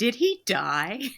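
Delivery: loud, slow and high called-out blurt. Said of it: "somebody really loudly went".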